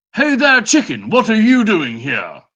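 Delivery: very high, swooping, posh put-on British accent. A player greets a chicken in character, attempting a fancy british accent. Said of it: "was going for fancy British".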